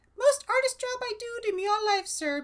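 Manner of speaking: very high, tiny, squeaky little mouse voice. A tiny mouse covered in strawberry pulp puffs up and addresses sir, squeaking. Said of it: "puffed out his chest and squeaked".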